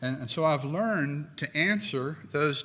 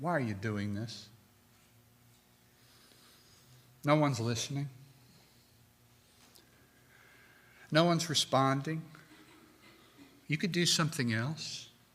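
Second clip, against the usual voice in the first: put-on, acted whisper. Quoting what the great enemy says to preachers: imitating a tempter's whisper. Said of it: "He whispers to me things like".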